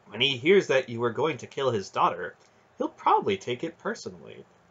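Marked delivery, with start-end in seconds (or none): none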